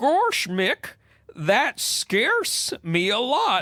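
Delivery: very slow, high, swooping, sing-song cartoon drawl. Reading a comic line aloud, playing the part: Goofy voice. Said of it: "Goofy says".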